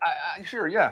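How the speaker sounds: unenthusiastic, hesitant, lukewarm. Asked if he's up for watching the game, the speaker agrees: unenthusiastic, hesitant. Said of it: "you don't sound very thrilled".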